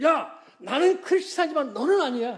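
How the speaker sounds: very high-pitched anger. Retelling answering someone who claimed to share his faith: imitating own angry retort. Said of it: "너무 화가 나서 그랬어요".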